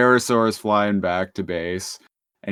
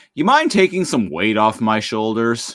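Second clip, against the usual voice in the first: irritated dad voice with swooping pitch. Retelling what a character in a story said, imitating an annoyed father. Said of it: "in a very like annoyed father kind of way".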